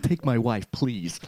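comic delivery, pitch bouncing up and down. Showing what Woody Allen sounds like, voice going up and down. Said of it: "Woody Allen's a bit more like this".

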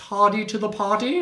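poor put-on British accent. Trying a phrase after being asked to say it in an accent: bad british accent. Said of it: "try it with a British accent".

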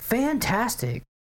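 high, giddy, mock squealing gush. Retelling how the rich coworker talked: imitating a giddy manner. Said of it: "crazy-ass fucking giddy attitude".

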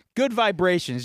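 ordinary delivery

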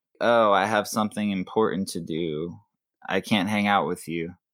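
ordinary delivery

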